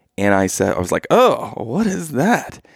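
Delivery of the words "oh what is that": very high, very slow, startled surprise. Telling a story about finding blood on tissue paper; retelling own surprise. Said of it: "Because it surprised me".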